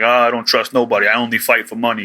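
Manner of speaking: put-on New York accent. Retelling a comic scene, voicing Super Sumo: Super Sumo with a New York accent. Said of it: "so he sounds like a New Yorker".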